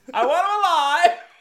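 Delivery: put-on very high, loud old-school beat-cop shout. Retelling the commissioner's order in a film scene: imitating a sixties beat cop. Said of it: "a sixties beat cop".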